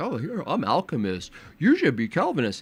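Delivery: animated puppeteer voice, pitch swooping up and down. Acting out a puppet conversation, speaking as God: acting out God as puppeteer. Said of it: "having a puppet conversation".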